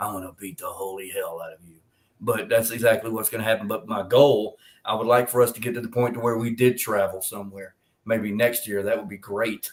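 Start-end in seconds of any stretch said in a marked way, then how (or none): 0.0-1.8 low, very quiet threatening murmur, barely audible. Noticing who you sound like, say the threat again in a Negan voice. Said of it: "I sound like Negan from The Walking Dead".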